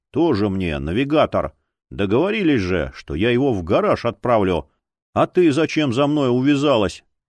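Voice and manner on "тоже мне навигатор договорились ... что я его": plain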